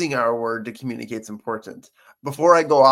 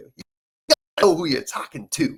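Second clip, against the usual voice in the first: New York accent impression; 5 semitones higher than usual. Speaker quoting something a New Yorker once said to the speaker, New York accent impression. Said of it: "my best impression of what a New Yorker".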